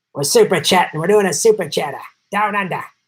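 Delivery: bad, horrible put-on Australian accent. Speaker reading super chats from two Aussies, in a horrible Australian accent. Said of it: "Horrible Australian accent".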